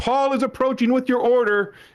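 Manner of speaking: mock very high, called-out announcer-style shout. Retelling walking to an aunt's house, retelling a shout. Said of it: "I'd have to shout as I approach".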